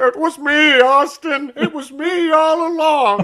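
shrill, blaring, high, booming, slowed and drawn out. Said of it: "Vince McMahon quotes in a Jimmy Stewart voice".

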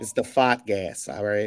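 put-on Bostonian accent. Showing how the phrase has to be said, in a Bostonian accent. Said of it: "say it with a like Bostonian accent".

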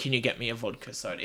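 normal talking voice

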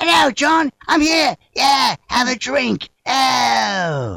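shrill, very high, loud screaming, "ow" drawn out. Telling listeners on KCAA how the comedian always is, imitating Ricky Gervais screaming. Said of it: "he's always screaming".

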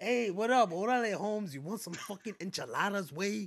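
fake, mock-intense Spanish-inflected street accent. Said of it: "Like, real intense".

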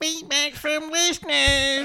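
squeaky, high-pitched voice. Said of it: "extra bit of squeak in that one".

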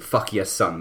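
plain

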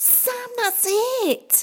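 sudden, very high gasped exclamation. Reading a story, Sophie suddenly realizes something and tells Sam, gasping. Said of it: "gasped Sophie".

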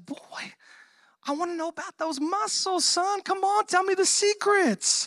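upset voice, pitched very high. Retelling the Samson story, acting out an upset Delilah: imitating upset Delilah. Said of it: "Delilah's getting upset and she's like".

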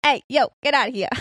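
put-on old-time gangster voice, mobster style. Showing how he voiced a bartender as a 1920s gangster, Al Capone gangster voice. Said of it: "I said it like a 20s gangster".

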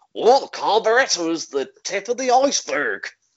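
country farmer pirate voice. Joking about a carburetor repair, doing a farmer-turned-pirate voice. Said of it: "like a farmer who's gone into piracy".

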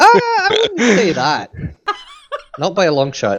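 put-on Scottish accent, very high, sing-song and swooping. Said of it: "do the Scottish accent".

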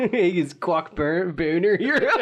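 put-on Philadelphia accent. Joking with others about a character's name, in a Philly accent. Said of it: "That's my Philly accent".

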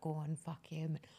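put-on whispering. Retelling what a play partner whispered in the speaker's ear, whispering dirty. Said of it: "She's whispering like dirty to me".

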